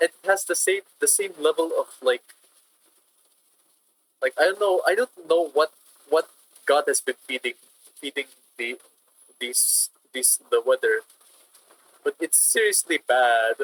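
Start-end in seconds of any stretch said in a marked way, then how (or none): 0.0-11.0 stammering, stuttering voice with words doubling up. Speaker telling listeners that things keep getting worse, stuttering. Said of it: "I'm stuttering right now".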